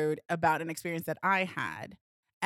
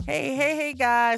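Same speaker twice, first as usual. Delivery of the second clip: loud voice, cracking high; 7 semitones higher, 7 dB louder than usual. A podcast host opens the episode greeting listeners, voice cracking. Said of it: "Why did my voice crack".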